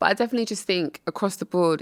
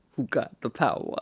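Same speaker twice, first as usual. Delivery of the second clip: put-on male voice, much lower, quieter; 4 semitones lower, 4 dB quieter than usual. Showing she voices the men herself, in a man's voice. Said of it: "anytime you hear a man, that's me".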